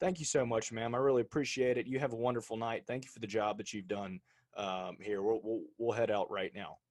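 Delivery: ordinary talk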